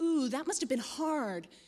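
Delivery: mock phony sympathetic voice. Retelling what a reporter said to the speaker, imitating her phony voice. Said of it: "she said this in a phony voice".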